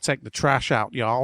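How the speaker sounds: hammy fake American accent. Joking that it's the only impression they can do, put-on American accent. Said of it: "There's my American impression again".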